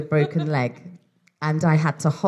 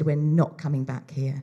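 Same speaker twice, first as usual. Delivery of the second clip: put-on angry voice. Retelling a daughter's reaction to a beach sign: imitating an angry daughter. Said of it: "'Cause she was so angry".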